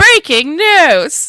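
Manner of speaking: piercing, shrill news-anchor yell, very loud, very high. Showing a best version of how Eric does it, imitating Eric's shouted news. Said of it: "That's my best version of Eric. ... Sorry, everybody that had headphones on".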